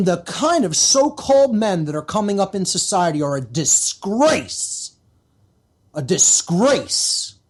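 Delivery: slow, angry, indignant and wrathful delivery. Criticizing so-called men in society, with anger in the voice. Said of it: "you should hear the anger in my voice".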